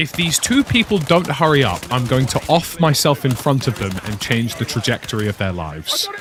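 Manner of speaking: plain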